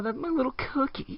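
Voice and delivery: high, very hushed voice. Joking around with friends, speaking in a raised pitch. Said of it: "I'm gonna raise my pitch every every time I talk about my cookie".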